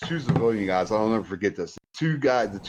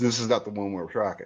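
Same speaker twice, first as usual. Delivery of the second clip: dead-serious, bone-dry, straight-faced deadpan delivery. Telling Rick how a guy answered, imitating a deadpan delivery. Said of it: "with the straightest face possible".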